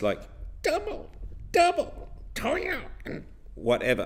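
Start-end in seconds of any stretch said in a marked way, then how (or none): 0.6-3.2 very high, witch-like voice. Showing learners another way to place the voice: witchy voice. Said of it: "in a witchy place".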